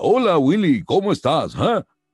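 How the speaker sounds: English-style TV voice, spoken in Spanish. Speaker recalls dubbing a TV alien into Spanish, Alf voice in Spanish. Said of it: "Y yo decía".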